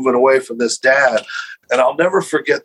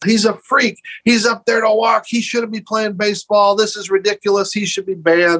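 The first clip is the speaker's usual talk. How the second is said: put-on high, heckling scream; 8 semitones higher than usual. Retelling how a heavyset man in the stands yelled: imitating a man screaming. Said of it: "starts screaming".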